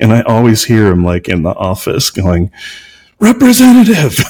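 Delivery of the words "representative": very high, raised shout. Retelling a partner on tech support calls: imitating partner shouting. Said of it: "It just gets louder and louder".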